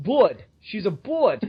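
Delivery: accent from Brooklyn. Saying a customer's last name, Burd, in a Brooklyn accent. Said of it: "so I just wanna do the Brooklyn thing".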